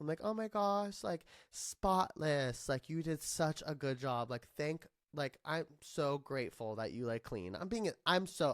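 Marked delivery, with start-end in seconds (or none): 0.2-7.5 sarcastic, joking, mock-grateful tone, acted out. Retelling texts sent about a messy apartment: retelling own sarcastic praise. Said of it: "that's how I joke. I'm sarcastic".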